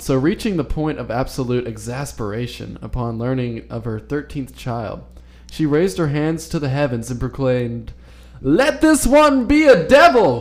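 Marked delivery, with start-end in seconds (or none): 8.4-10.4 very high, shrill, loud southern preacher proclaiming cry. Speaker retells a mother of thirteen proclaiming to the heavens, in a southern pastor accent. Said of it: "I sort of went for the southern pastor accent".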